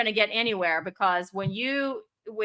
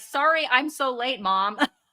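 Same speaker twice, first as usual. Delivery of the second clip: put-on calm, unbothered tone; 2 semitones higher than usual. Retelling her son arriving late, imitating his calm apology. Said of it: "just calmly goes".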